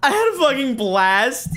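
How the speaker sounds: very high, very loud, shrill, swooping burst of enthusiasm. Asked for a little more enthusiasm, say it again more enthusiastically. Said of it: "A little bit more enthusiasm".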